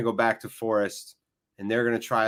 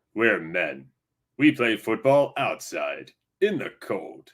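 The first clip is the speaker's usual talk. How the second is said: fake stadium sports announcer delivery; 2 semitones lower than usual. Joking about men playing football outside in the cold, put-on announcer voice. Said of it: "I'll do like announcer voice for you".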